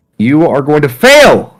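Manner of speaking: loud screaming. Announcing a player's fate at the table: screaming. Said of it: "Why are you screaming?".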